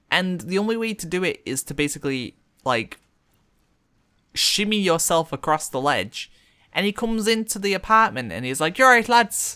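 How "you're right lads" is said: put-on loud, casual Irish accent, pitched up. Retelling what a man said after shimmying into the apartment: Irish accent. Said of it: "the same Irish voice".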